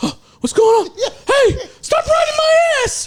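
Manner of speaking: voice shooting up very high and squeaky. Retelling a freeway ride with a tailgater, imitating Howard going high-pitched. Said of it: "He got all fucking high pitched on us".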